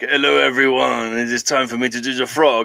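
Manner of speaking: English spoken with a put-on French accent. Imitating a French performer greeting his audience: put-on French accent. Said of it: "in his French accent and his French language".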